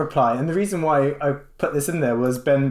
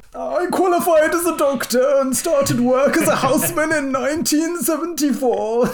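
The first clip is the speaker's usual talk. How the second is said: put-on very high, elderly man's voice; 12 semitones higher, 3 dB louder than usual. Reading aloud a doctor's quote from a paper when asked, in an old man voice. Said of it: "You can do the old man voice".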